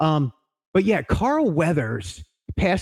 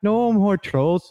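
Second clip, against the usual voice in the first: high, joking put-on Norwegian leprechaun voice; 5 semitones higher than usual. Joking about the troll ride closing: put-on Norway leprechaun voice. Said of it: "I don't know why I talk like that".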